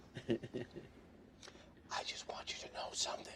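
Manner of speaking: unsettling, creepy, breathy, hushed whisper. Retelling what a woman across the table said to the speaker, retelling someone's whisper. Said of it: "The whisper creeped me out a little bit".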